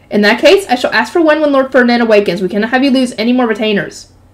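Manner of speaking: ordinary delivery, nothing marked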